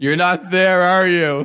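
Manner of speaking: high, mad, exasperated angry yell. Retelling a closed drive-thru visit: imitating Dave yelling. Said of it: "he just yells at it".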